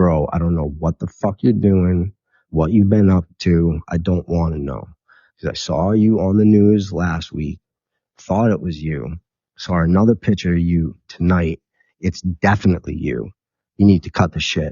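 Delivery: ordinary talk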